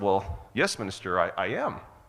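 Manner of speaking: plain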